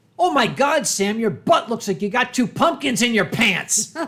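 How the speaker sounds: very loud, carrying, blurted delivery. Retelling a friend's remark across the office: imitating Quinn saying it very loudly. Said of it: "very loudly, so the entire company could hear it".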